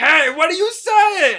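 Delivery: mock outrage, high, loud and drawn out.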